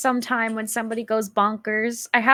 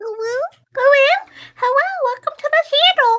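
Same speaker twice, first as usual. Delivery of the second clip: sugary, high-pitched cutesy tone; 4 dB louder than usual. Speaker shows the voice they must use on stream: really cutesy voice. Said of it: "I have to talk really, really cutesy".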